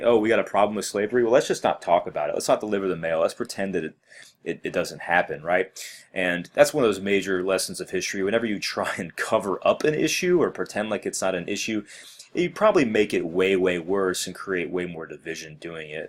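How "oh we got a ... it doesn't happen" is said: ordinary talk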